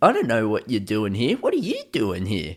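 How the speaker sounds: swooping, gliding line.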